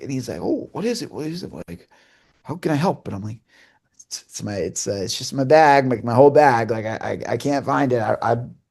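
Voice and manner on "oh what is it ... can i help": broad, sing-song, put-on Western Canadian accent. Retelling a man's words on a FaceTime call: big Western Canadian accent. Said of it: "in his big Western Canadian accent".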